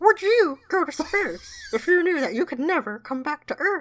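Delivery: bad, very high, squeaky put-on voice.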